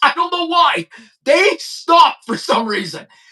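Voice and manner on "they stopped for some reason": normal talking voice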